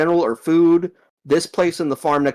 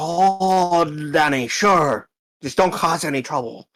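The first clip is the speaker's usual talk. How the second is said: put-on very slow elderly old man voice, drawn-out "oh". Voicing a gnome answering a player's request to go in, old man voice. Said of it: "he sounds like an old man".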